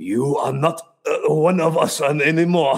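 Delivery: slow, bad put-on German accent. Speaker shows how they sound when trying German, in a bad German accent. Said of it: "Normally when I try to do German".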